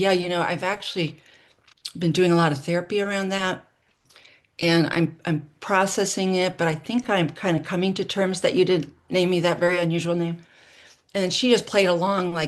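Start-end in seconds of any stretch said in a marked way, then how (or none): none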